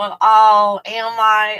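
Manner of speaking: play-acted self-doubting tone. Imitating women answering a compliment: imitating an insecure reply. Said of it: "the insecurity".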